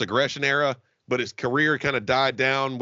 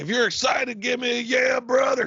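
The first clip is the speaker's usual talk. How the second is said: very high-pitched, hyped-up crowd-rousing call; 11 semitones higher than usual. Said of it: "he was like".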